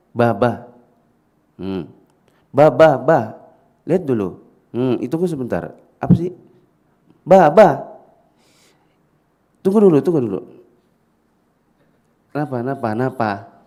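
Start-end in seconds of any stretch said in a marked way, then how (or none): 0.2-10.5 voice escalating with each repetition. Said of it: "Eskalasi suara pasti akan dari kecil, naik, naik, naik".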